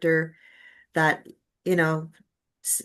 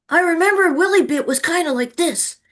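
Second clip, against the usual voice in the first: put-on high, loud, childlike little boy voice; 11 semitones higher, 5 dB louder than usual. The speaker shows the listener the different voices they can do: Willie Bit little boy voice. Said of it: "that's kind of like my little boy voice".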